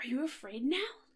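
acted, mock-hopeful tone. Retelling a story, the speaker acts out the man questioning the nervous woman, mock-hopeful. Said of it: "Sounding like, hopeful".

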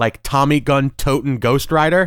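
ordinary talk, nothing marked

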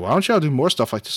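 plain

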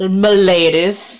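said with sarcasm. Acting out refusing to give in and walking off, sarcastic 'm'ladies'. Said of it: "I say sarcastically".

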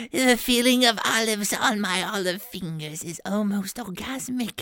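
affected voice. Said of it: "That's a pretty nice voice".

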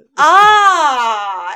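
poorly done mock movie yell, loud and high.

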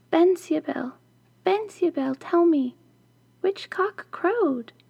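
trembling whisper. Narrator reads her whispering through the wall at midnight, trembling whisper. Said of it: "trembling, Prunella knocked on the wall and whispered".

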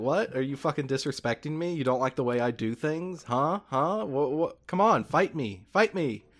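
put-on shocked outrage. Retelling a game scene, the speaker plays Majima reacting to Kiryu: Majima, mock-shocked outrage. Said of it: "shocked at this statement".

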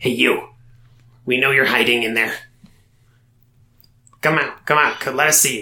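minuscule, cross, angry little goblin voice. A voice calls to someone hiding in the messy room, minuscule and angry voice. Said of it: "something like a minuscule and angry in a familiar way".

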